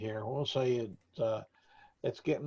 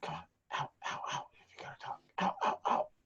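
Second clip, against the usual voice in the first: fast, hurried whisper; 8 semitones higher, 4 dB quieter than usual. Voicing an acolyte who shushes the group out of the chapel: quiet voice. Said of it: "kinda quietly comes up and says".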